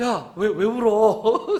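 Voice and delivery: bewildered, at a loss, flustered, slow and stumbling. Retelling asking a crying student why they cry: imitating own flustered question. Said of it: "내가 당황스러워서 정말".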